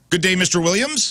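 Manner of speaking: very high, proper, formal grown-up manner. Imitating how a classmate greeted them at school: imitating Michael Hobbs, very adult. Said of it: "Michael Hobbs would talk to me like".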